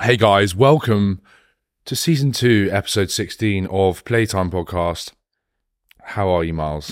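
calm, mellow, relaxed and soothing voice. Restarting a podcast welcome to another speaker: relaxed, soothing delivery. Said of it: "I'm gonna be a lot more relaxed this time".

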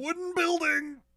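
very high-pitched, loud shout. A player in a tabletop game shouts out in character: yelling. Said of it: "now I'm yelling".

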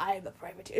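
big, played-large put-on pirate voice. Imitating a character who insists he is not a pirate: big pirate voice. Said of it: "With his big piratey".

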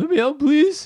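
very high, loud, cracking, goofy dog voice. Showing the voice they use when speaking for their dog, a goofy dog voice. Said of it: "we speak in a goofy voice for our dog".

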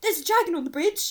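very loud, high, put-on generic English man accent. Retelling what a man said on a rope bridge, in a generic English man voice. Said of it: "my generic man English voice".

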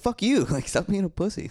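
acted, very high, mad, angry snapping. Retelling how a girlfriend pushed them to act on an idea, imitating angry snapping. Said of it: "She just got so mad".

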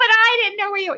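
acted, frantic, very high, rattled-off panicked speech. Retelling own words to him after searching a parking lot, acting out freaking out. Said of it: "I'm freaking out".

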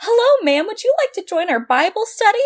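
mock bouncy, jovial cheerfulness, very high pitch. Speaker imitates an eighteen-year-old who walked up to her, imitating a jovial voice. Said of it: "he like was all jovial with a little skip".

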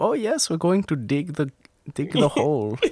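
put-on over-the-top German accent. Describing the german wiener dog's one line, in a ridiculous german accent. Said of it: "Just in a ridiculous German accent".

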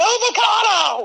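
sudden high-pitched yelling. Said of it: "just yelling".

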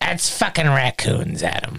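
grizzled chain-smoker voice. Retelling a woman's reply to Adam, in a grizzled voice. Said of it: "I love that you give her such a grizzled voice".

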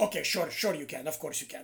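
put-on Russian accent. Retelling telling his dad he can play out there: imitating dad's russian accent. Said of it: "he's got the Russian accent".

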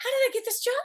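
high, baffled, puzzled tone.

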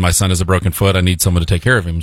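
usual speaking voice

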